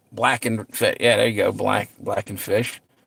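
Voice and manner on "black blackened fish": slow, soft, savoring delivery. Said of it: "what's it say?".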